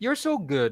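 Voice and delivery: sarcastic, ironic, insincere tone. Giving a learner an example while explaining sarcasm, sarcastic. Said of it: "it's sarcastic".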